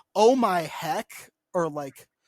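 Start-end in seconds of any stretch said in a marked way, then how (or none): 0.2-1.1 put-on old-fashioned, clean-cut, wholesome way of talking. Imitating how Mormons talk, like they're from the fifties. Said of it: "Mormons will be like".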